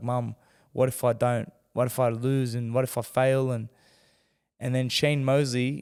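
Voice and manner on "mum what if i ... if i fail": put-on tearful crying voice. Recalling breaking down when mum came to the room, retelling a tearful plea. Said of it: "bursting into tears, crying, and just being like".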